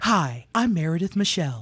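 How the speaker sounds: low, smooth radio announcer voice.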